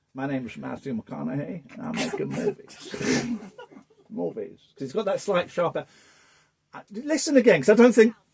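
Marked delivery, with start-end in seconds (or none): 0.1-4.5 very quiet, soft, generic American man's voice. Showing off impressions to a group, doing a Matthew McConaughey impression. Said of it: "It's just generic American man".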